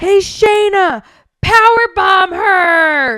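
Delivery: mock very slow loud high yell, 'her' stretched long. Retelling a wrestling match moment: imitating Derek yelling. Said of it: "as loud as he could, he goes".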